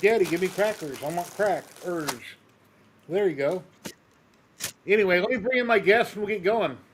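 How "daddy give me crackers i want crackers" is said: put-on pet dog voice. Voicing the noisy dog during a live show: voicing the dog. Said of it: "Got a noisy dog again. It's like".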